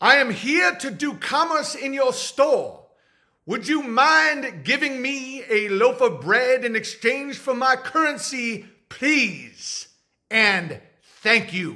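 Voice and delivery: put-on, aggressively polite tone. Speaker imagines himself buying bread in a store, mock aggressively polite. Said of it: "Aggressively polite".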